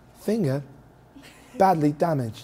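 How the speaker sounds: put-on British woman's voice. Joking about a finger being out of commission, doing the old british lady voice. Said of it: "I mean the British lady voice".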